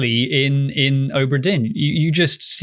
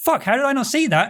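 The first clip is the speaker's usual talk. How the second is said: high, fast, blurted outburst of sudden realization. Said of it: "You're like".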